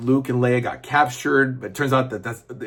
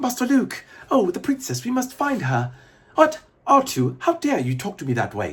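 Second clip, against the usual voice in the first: put-on fussy robot voice, higher; 9 semitones higher than usual. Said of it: "doing C three P O's lines".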